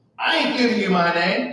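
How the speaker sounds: play-acted dismissive, rude tone, full of attitude. Retelling how the court clerk refused to give her name: imitating a clerk with total attitude. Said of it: "total attitude".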